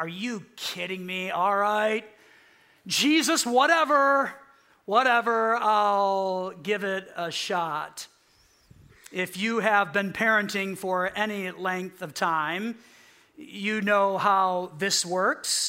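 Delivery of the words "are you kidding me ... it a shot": play-acted heavy dry sarcasm, drawn-out "I'll". Acting out own response to prompts from Jesus: imitating own sarcastic reply. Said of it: "I respond the same way sometimes".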